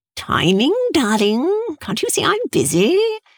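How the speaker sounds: swooping voice spoken through clenched, gritted teeth. Reading a story, a man answers a woman demanding to know what's going on: through gritted teeth. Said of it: "he spoke with gritted teeth".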